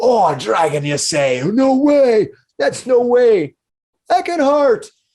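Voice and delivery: shouting. Voicing tavern miners hearing about a dragon: miners yelling. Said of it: "They start yelling at it".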